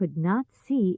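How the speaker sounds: plain reading voice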